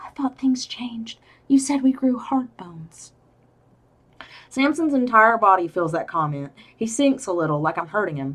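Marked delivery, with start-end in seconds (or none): 0.0-3.1 soft, whispered words. Reading a novel passage aloud, the narrator's spoken line: whispering. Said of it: "My voice comes out in a whisper".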